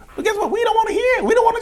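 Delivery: shrill, mocking, self-admiring shout.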